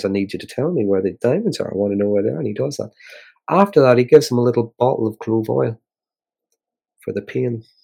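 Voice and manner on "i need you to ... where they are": mock courteous, calm, even, pleasant, never threatening. Speaker retells a scene, quoting a character who never raises his voice, mock-polite pleasant tone. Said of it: "He's just polite and pleasant as he says".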